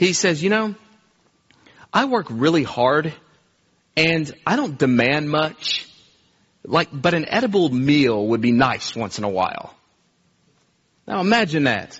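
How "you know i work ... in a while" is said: put-on mean-spirited, snarky sarcasm with swooping pitch. Acting out a man speaking to a woman after smelling something burned: mock snarky, quiet sarcasm. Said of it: "snarky and yet quiet and sarcastic way".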